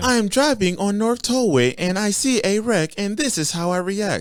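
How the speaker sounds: very high, small robotic phone assistant voice. Imagining a driver stepping out at a wreck with his phone out: Siri voice. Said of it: "that little Siri voice".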